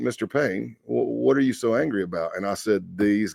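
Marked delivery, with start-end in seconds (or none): 0.0-2.4 put-on easy, unruffled British accent. Retelling a conversation, quoting the man who spoke to him, in a cool British accent. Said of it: "with this cool British accent".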